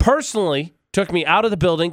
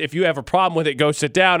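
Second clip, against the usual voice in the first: normal talking voice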